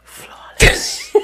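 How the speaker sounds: flawless whispered very high and hushed. Acting out what she whispered: whispered "flawless". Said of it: "She whispers like this".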